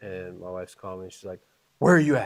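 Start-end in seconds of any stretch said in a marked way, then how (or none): 1.8-2.3 put-on frantic, panicking, freaked-out voice. Retelling a call from his wife: imitating wife freaking out. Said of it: "Like, freaking out".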